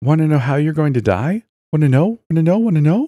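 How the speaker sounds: very high, squeaky voice broken by giggles. Among small quiet voices talking over each other, one rises out: high-pitched giggling voice. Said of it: "A distinctly high-pitched voice emerged from the others. It giggled".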